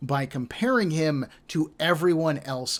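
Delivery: ordinary delivery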